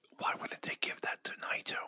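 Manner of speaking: soft whisper, kept very low. Asking the other speaker a question about a comment, whispering. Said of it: "Stop whispering at me".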